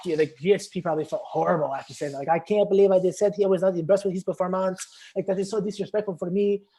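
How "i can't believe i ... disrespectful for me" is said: put-on high-pitched, odd-sounding Thai accent. Imagining Georges St-Pierre's thoughts after trash talking: imitating Georges St-Pierre as a weird Thai guy. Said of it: "I made him sound like a weird, like, a weird Thai guy".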